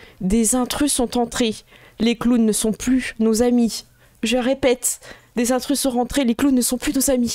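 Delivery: robotic female alarm announcer voice. Voicing an alarm announcement over the loudspeakers: female robot voice. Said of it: "c'est une voix de robot de femme".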